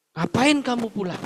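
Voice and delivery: put-on furious, loud, high, angry scolding tone. Quoting what someone often said, speaker is imitating someone angry and loud. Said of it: "dengan nada yang marah, dengan nada yang keras".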